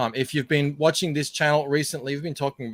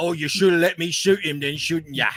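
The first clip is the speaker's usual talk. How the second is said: higher put-on London film-actor voice; 3 semitones higher, 3 dB louder than usual. Quoting a line from a Jack the Ripper movie: Michael Caine impression. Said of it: "He's like".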